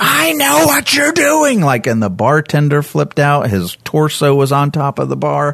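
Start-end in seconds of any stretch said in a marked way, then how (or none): 0.0-1.6 put-on sudden screamed outburst, very high pitched. Retelling how a man at a bar screamed at him: imitating a man screaming. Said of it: "and he screamed".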